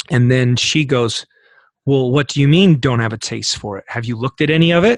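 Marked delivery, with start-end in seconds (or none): 1.8-5.0 mock pointed, very accusatory, challenging tone. Retelling what a woman asked him, mock-accusatory. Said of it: "in a very accusatory way".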